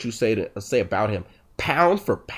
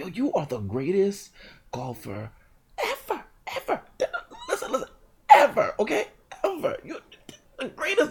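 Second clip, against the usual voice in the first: put-on wheezing voice, much higher pitch; 11 semitones higher than usual. Retell what your asthmatic dad would say about Tiger Woods, imitating dad's wheezing voice. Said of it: "That's my dad's voice".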